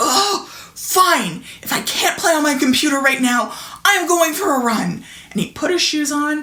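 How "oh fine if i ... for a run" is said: put-on annoyed, angry growled-out outburst. Retelling what the speaker's oldest child said when angry, imitating an angry growl. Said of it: "he growled out".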